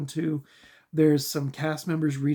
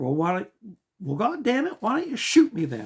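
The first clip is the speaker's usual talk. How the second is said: rough imitation, pitched-up, swooping character voice; 5 semitones higher than usual. Quoting a funny movie scene: Billy Bob Thornton impression. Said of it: "I can't do his voice justice".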